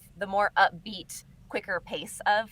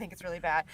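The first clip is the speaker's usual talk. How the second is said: put-on deadpan serious voice, quieter; 3 semitones lower, 5 dB quieter than usual. Retelling an improvised sitcom moment, imitating Andy's deadpan delivery. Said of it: "he just is so deadpan and serious".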